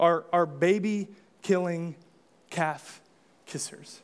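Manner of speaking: spoken very slowly.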